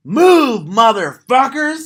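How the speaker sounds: all-out shriek, very high, loud and full-throated. Retelling how a woman was asked to yell at the cows, imitating a scream. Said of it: "And she screams".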